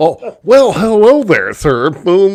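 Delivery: nerdy put-on voice. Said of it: "it's always like the nerdiest, dorkiest".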